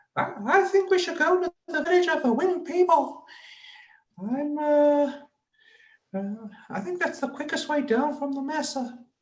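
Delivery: very high-pitched, squeaky little put-on character voice. Retelling what a small-headed group member says, in a squeaky voice. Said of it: "he's got quite a squeaky voice, and he'll go".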